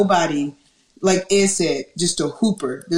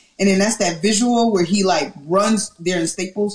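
usual speaking voice

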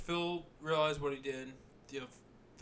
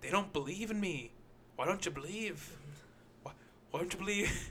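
voice like a cartoon leprechaun; 4 semitones higher than usual. Retelling a story, doing Harry's spiel, sounding like a leprechaun. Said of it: "Why is he sound like a leprechaun?".

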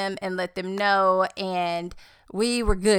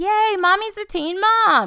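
put-on very high, drawn-out children's cheering shout; 12 semitones higher, 4 dB louder than usual. Retelling kids yelling in public, imitating kids yelling.

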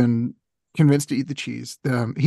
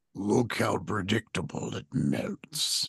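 very soft, hushed put-on dragon voice; 5 semitones lower, 9 dB quieter than usual. Performing a mock Subway ad bit: dragon voice. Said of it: "some dragon voice".

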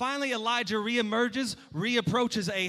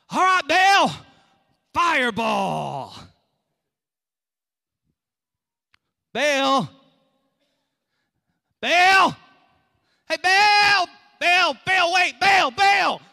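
very loud, swooping, revved-up, hyped calling out; 7 semitones higher, 11 dB louder than usual. Retelling prophets calling on Baal for fire: imitating revved-up calling out. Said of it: "they're getting all revved up".

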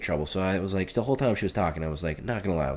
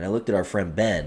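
plain

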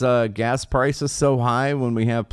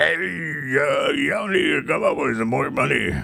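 rough, raspy heavy-smoker voice, dragged-out "uh"; 2 semitones higher than usual. Ranting about world leaders and voicing Zelensky: Zelensky heavy-smoker voice. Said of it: "sounds like he smoked like 42 packs of Marlboro".

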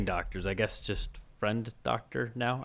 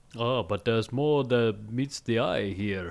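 amateur put-on Jamaican accent. Narrating a story recap for co-hosts, in an attempted jamaican accent. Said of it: "That was my attempt at a Jamaican accent".

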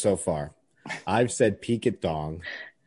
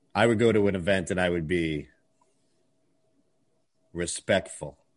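low, deeper, dry delivery; 2 semitones lower than usual. Showing another speaker how to say the line: deeper, drier voice. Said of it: "make your voice a little bit deeper and drier".

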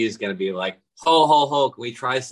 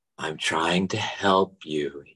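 very slow, friendly voice, lower; 5 semitones lower, 4 dB quieter than usual. Trying to help a friend: slow, friendly voice. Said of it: "my friend kind of voice, very slow voice".

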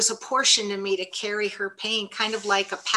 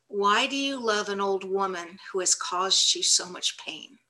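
plain

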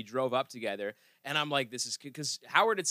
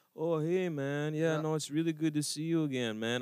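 sleepy, drowsy French delivery; 4 semitones higher than usual. Imitating someone with a sleepy, francophone delivery. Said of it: "very sleepy, like, kind of francophone delivery".

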